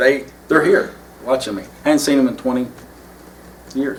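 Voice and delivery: choked-up, emotional voice catching. Speaking about old friends who came to watch, getting choked up. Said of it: "I'm getting choked up".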